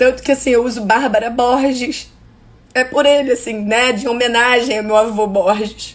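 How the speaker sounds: tearful, choked-up voice, speaking through tears. Telling a personal story about her grandfather, crying with emotion. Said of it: "eu tô chorando aqui de emoção".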